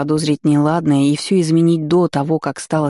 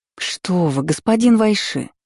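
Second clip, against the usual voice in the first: exclaiming, higher pitch; 4 semitones higher than usual. A woman responds to a man's complaint about her, exclaiming. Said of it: "воскликнула".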